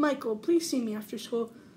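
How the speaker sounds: ordinary delivery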